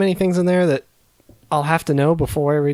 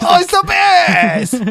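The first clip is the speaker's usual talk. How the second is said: very high-pitched, loud voice with drawn-out words; 13 semitones higher, 6 dB louder than usual. Imitating a listener friend again, sounding like Watto and Sebulba voice. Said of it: "It was like Watto and Sebulba".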